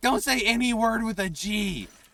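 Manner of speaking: mock, very high, shrill, loud, pissed-off voice. Retelling how the speaker's little brother reacted during a race, imitating a pissed-off little brother. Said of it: "my little brother was getting like so fucking pissed off".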